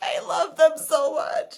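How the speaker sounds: acted tearful, high pitch. Recounting being tired and stressed with her girls; retelling being weepy. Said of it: "I was so weepy".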